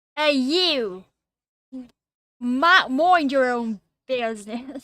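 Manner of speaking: put-on Brooklyn accent. Explaining how words sound in an accent, then speaking in a brooklyn accent. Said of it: "the word you is pronounced you in this accent".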